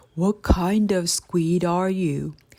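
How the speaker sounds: deep, low, rumbling, grumbling whale voice. Narrator reading a sperm whale's question to the robot, low, grumbling whale voice. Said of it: "The whale's low voice grumbled".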